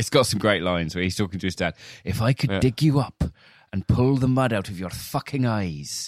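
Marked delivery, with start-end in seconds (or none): 2.0-6.1 put-on Welsh accent, pitched up. Quoting a movie line where a man talks to his absent father, Tom Hardy Welsh accent. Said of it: "are you doing accents now?".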